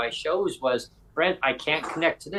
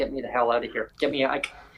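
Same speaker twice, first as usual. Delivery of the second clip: imitated whisper. Retelling a visit to look at a place: imitating Sonia whispering. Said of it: "Sonia kinda whispered".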